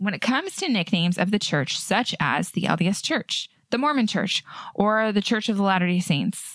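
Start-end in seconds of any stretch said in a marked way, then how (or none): none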